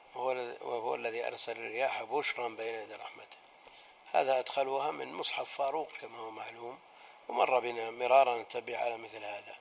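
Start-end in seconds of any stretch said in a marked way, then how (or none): none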